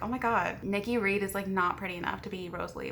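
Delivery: ordinary delivery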